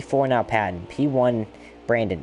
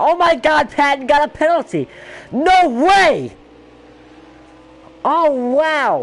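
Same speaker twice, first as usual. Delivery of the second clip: thrilled shrieking, very high-pitched and very loud; 8 dB louder than usual. Commentator reacts to a driver getting a penalty, excited screaming. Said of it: "Sorry for the screaming".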